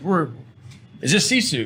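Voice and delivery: put-on English accent. Retelling a phone call, imitating the caller in an English accent. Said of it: "in his English accent".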